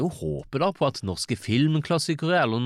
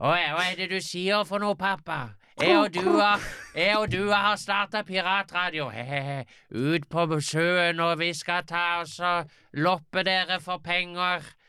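high, gleeful character voice. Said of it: "så må du ta den som Elias Reikefisker".

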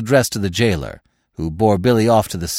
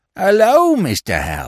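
feigned, fake-cheerful, high, sing-song; 9 semitones higher than usual. A man greeting an acquaintance whose voice made him feel unwell, with feigned joy. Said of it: "he exclaimed with feigned joy".

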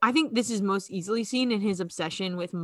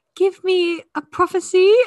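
very high, loud, shrill put-on British accent; 11 semitones higher, 9 dB louder than usual. Recalling a scene with Umbridge in her office: Umbridge British accent. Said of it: "I'm nailing Umbridge's accent".

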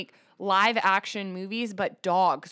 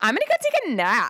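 put-on sassy valley girl voice, pitched up; 6 semitones higher, 5 dB louder than usual. Asked to show the voice you would have as a little dog, use a sassy valley girl dog voice. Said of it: "Like a sassy valley girl".

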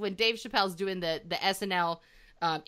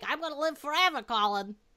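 tiny, small, high, put-on little voice; 6 semitones higher than usual. Describing the little voice a woman does, imitating her: imitating her little voice. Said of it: "she's talking like this".

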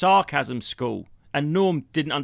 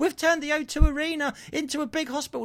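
high, mocking put-on voice. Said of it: "they were going".

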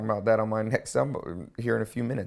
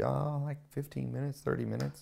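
sheepish tone, higher and quieter; 4 semitones higher, 7 dB quieter than usual. Retelling a friend's answer on how long she practiced: imitating a sheepish reply. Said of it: "kinda sheepishly".

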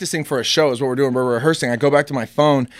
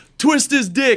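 high-pitched shouting; 10 semitones higher than usual. Retelling a shout from the back of the stadium: imitating someone yelling. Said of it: "And he just yells".

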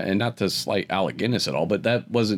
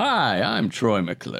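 very slow, drawn-out, swooping sing-song delivery; 2 semitones higher than usual. Quoting the famous catchphrase after the topic of Phil Hartman comes up: Troy McClure voice. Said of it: "Everybody loves Phil".

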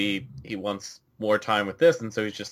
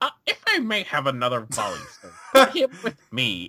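animated, high, swooping wrestling-manager voice, pitch swinging around; 5 semitones higher than usual. Imagining Paul pitching to Vince: Paul Heyman impression. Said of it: "just Paul going".

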